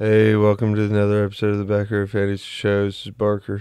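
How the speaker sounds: put-on unexcited, dead-sounding, joyless, glum voice. Repeating the other speaker's opening to mock how it sounded: imitating a glum, unexcited intro. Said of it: "Is that how I sounded?".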